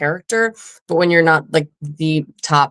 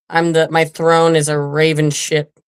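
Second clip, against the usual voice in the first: ordinary talk, nothing marked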